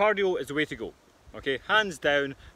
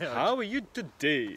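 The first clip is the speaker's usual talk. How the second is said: put-on American accent. Opening a live show and greeting the other host: put-on American accent. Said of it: "putting an American accent on".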